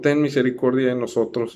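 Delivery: ordinary talk, nothing marked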